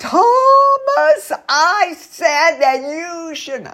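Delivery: very high, loud, shrill, upset voice. Speaker demonstrating how an upset teacher scolds a child, loud, shrill upset voice. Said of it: "their voices get louder and shriller".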